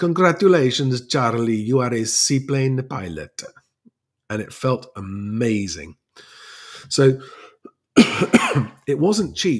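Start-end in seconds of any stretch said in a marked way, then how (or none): 0.0-3.4 put-on heavy, thick Italian accent, laid on. Quoting an Italian chief instructor at Aero Club Como, thick Italian accent. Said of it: "in his very thick Italian accent".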